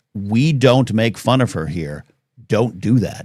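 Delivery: slow, mock earnest, all-serious stern tone. Retelling how the roommate warned about making fun: imitating someone getting serious. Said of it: "she got all serious with me".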